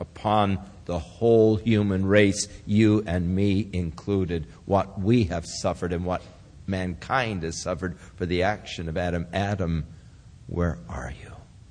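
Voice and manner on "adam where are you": acted sobbing voice, quieter. Speaking of adam's transgression, voicing the call to adam with a sob in the voice. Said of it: "hear the sob in the voice".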